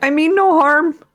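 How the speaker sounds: high, called-out voice. Calling out to hidden dwarves in character: yelling back. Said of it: "I'll yell back in Dwarven".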